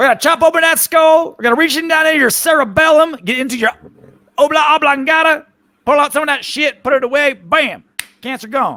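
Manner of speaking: put-on very high, southern-accented country-doctor voice. Joking about doctors, the speaker plays a brain surgeon in a southern-accented brain surgeon voice. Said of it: "a brain surgeon with a with a southern accent".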